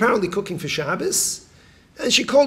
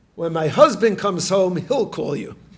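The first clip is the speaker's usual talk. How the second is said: ordinary delivery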